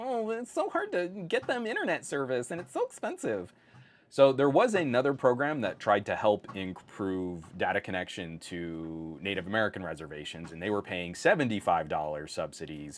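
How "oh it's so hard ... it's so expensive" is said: mock very high, put-upon, whiny sing-song. Mocking the companies' complaints about rural service: imitating a whiny voice. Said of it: "making that whiny voice about".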